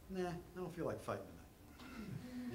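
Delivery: high, slow, lazy dismissive brush-off tone.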